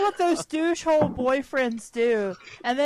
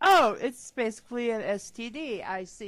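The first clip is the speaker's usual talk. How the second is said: ordinary talk, nothing marked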